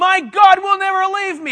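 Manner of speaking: loud, high-pitched, excited, fired-up, pumped-up yell. Right after apologizing for yelling, still going: pumped-up yelling. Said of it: "I'm pumped up about this".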